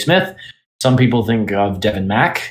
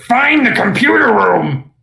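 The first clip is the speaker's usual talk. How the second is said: very high character voice, hard on the throat; 13 semitones higher, 4 dB louder than usual. Showing a voice that is very taxing on the throat: Vector voice. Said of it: "I can do Vector".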